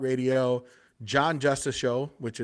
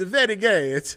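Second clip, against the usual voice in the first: put-on Kazakh accent, higher and louder; 7 semitones higher, 6 dB louder than usual. Showing another take on the same chat line: Borat voice. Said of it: "I can do a Borat".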